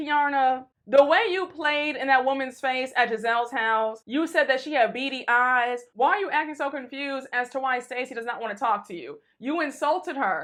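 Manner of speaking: ordinary delivery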